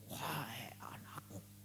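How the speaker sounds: raspy, airy, hushed, husky heavenly whisper. A preacher mocking the idea of hearing God's voice, in a husky breathy voice. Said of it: "dengan suara serak-serak basah gitu".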